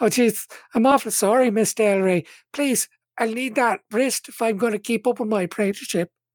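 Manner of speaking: high, demure, feigned-helpless voice. Voicing Willa as she apologizes to Miss Delray: feigned helplessness. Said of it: "And feigned helplessness".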